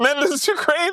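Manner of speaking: put-on freaked-out disbelief. Retelling a story to a friend, imitating a guy freaking out. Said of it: "He's freaking out".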